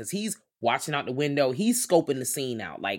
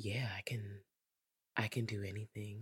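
put-on breathy voice, much quieter and lower; 4 semitones lower, 15 dB quieter than usual. Retelling what a woman said to him, mimicking her breathy voice. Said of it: "She had that breathy ass voice".

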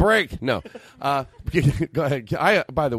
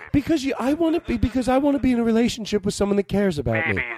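put-on woman's voice, pitched high; 8 semitones higher than usual. Playing a woman complaining on the phone: put-on Tootsie woman voice. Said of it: "I have to do the Tootsie Woman".

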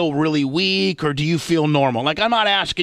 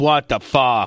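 mock perturbed voice, lower pitch; 3 semitones lower than usual. Imitating how the other speaker sounds, mocking them: imitating someone perturbed. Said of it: "you almost sound perturbed".

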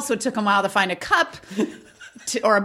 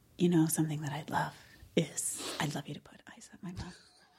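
very quiet, hushed, intimate whisper; 10 semitones lower, 13 dB quieter than usual. Acting out what a woman said to a friend: imitating someone whispering. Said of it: "Why is she whispering?".

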